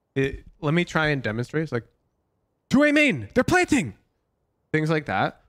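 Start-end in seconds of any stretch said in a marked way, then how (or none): 2.7-4.0 pitched way up, raised, very urgent callout. Coaching a team on comms, the speaker demonstrates a raised voice for urgent callout. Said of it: "it's like a raised voice for urgent comms".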